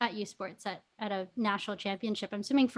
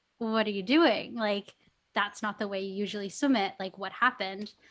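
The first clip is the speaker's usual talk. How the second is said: usual speaking voice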